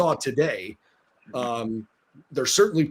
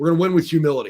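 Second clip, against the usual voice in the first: dry, matter-of-fact, deadpan serious delivery, brisk; 4 dB louder than usual. Recounting an answer given in a post-game tv interview: imitating a deadpan serious reply. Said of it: "deadpanned at the camera and pretty serious said".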